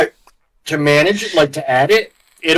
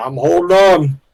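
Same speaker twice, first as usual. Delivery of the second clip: talking while munching, mouth full; 3 dB louder than usual. Told to hold on, a player answers while eating crackers, talking while munching. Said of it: "You sound like you're munching".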